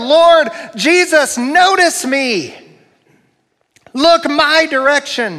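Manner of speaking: put-on desperate pleading cry, held at moderate volume. A speaker imagines a crowd calling out to Jesus, acting out a loud yell. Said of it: "how loud they must have yelled".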